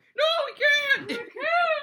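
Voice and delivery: exaggerated mother voice, very high, shrill, loud, drawn-out. Mocking another speaker's impression of their mother: exaggerated imitation of a mother refusing. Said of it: "Is that your impression of your mom?".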